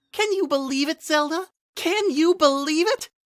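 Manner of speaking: very high, airy little fairy voice. Reading a story aloud, a woman entering a room speaks in a higher-pitched voice. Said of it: "in her now higher-pitched voice".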